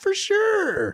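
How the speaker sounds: high-pitched, exaggerated, sarcastic tone.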